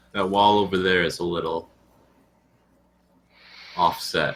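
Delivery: hushed half-whisper, said aside. Pointing out a wall to a good friend, the speaker is half-whispering. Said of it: "I'm going to whisper to my good friend".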